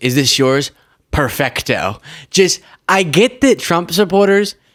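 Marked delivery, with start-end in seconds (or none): none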